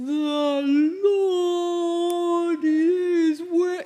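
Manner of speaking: loud, very slow, drawn-out whale call. Leading a group in saying a Bible verse: whale voice. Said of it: "in whale".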